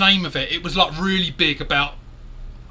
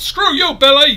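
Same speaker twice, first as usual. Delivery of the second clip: put-on thick Irish accent, laid on heavy, loud and high; 8 semitones higher, 8 dB louder than usual. Describing an irish man, the speaker quotes him in a strong irish accent. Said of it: "he's got a really strong Irish accent".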